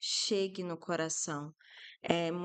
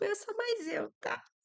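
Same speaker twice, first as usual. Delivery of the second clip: acted-out very high, nervous giggling laugh-talk. Showing how someone asserts themselves: acting nervous laughter while talking. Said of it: "Rindo de nervoso".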